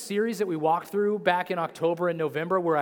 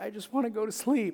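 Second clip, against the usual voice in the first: mock bawling, put-on crying, quieter; 4 semitones higher, 4 dB quieter than usual. Telling about bedtime, the speaker imitates him bawling. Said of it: "he was just bawling".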